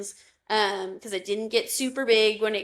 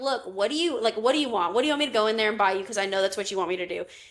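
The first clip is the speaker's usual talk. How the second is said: put-on sassy voice. Retelling a pin trade with a reluctant seller: retelling own sassy remark. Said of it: "I'm getting a little sassy".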